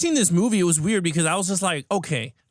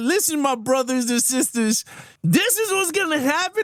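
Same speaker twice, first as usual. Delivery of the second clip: grand, rousing speechmaking delivery; 6 semitones higher than usual. Retelling a villain's speech in a film: imitating Magneto giving a speech. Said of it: "he gave the speech like".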